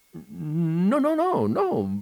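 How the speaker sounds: very slow, high, halting confused stammer, drawn-out "no". Narrator reads a confused shop clerk's line, stammering, confused. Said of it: "balbettò il commesso confuso".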